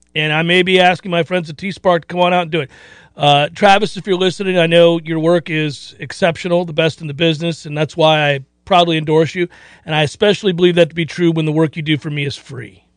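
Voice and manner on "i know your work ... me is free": normal talking voice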